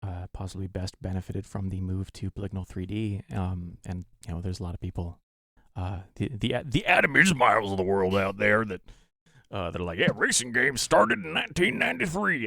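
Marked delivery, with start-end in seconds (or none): 10.0-12.5 voice pushed very high, squeaky. Doing a quick impression while discussing racing games: Adam Ismail impression. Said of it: "a perfect, flawless Adam impression".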